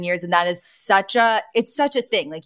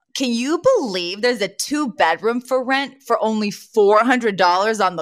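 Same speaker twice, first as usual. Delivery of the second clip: usual speaking voice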